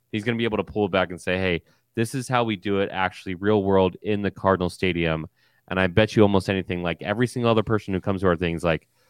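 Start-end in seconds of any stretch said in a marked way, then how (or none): none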